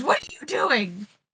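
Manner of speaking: screeching, panicked cry. Retelling a cartoon fight, the speaker voices Starscream as he screeches at Bulkhead: Starscream screeching. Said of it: "who screeches".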